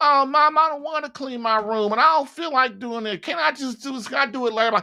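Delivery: play-acted, high-pitched, bratty kid whining. Acting out a kid his mom tells to clean his room, Johnny whining about his room. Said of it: "they're bitching and whining".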